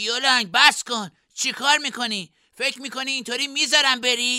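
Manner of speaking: very high-pitched, loud shout. Narrator reads a character confronting another who just surrendered, shouting. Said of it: "ژاکو داد زد".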